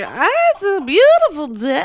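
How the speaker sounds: acted, high, slow, loopy, spaced-out stoned drawl. Retelling a scene where a drugged character greets the mom: imitating someone high. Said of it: "she's super high".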